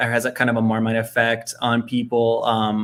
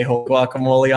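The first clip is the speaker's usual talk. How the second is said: ordinary delivery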